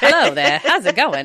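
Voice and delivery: put-on 1940s old-movie mid-Atlantic accent. Describing how the crows talk, in a 1940s mid-Atlantic accent. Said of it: "Like nineteen forties".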